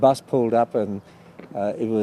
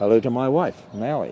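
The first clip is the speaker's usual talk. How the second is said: plain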